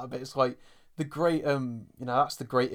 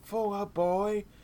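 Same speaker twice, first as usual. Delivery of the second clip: mock frantic, high, panicked scream; 7 semitones higher than usual. Retelling a film-set scene where the crew panics: imitating people screaming. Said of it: "They're screaming".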